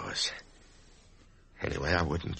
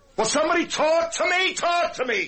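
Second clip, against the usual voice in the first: high, loud, frantic shouting. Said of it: "Excuse me for shouting".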